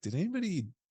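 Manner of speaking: mock incredulity, high pitched and fast.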